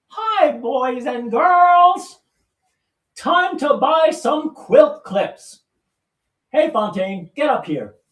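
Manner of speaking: very high, slow, silly sock-puppet voice. Speaker puts a sock on for a puppet show: sock puppet voice. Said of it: "I should be doing a puppet show".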